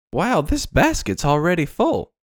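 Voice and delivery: little sing-song lilt, light lilting delivery. Actor performing a take on set after the call of action, with a lilting voice. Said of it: "you put a little lilt".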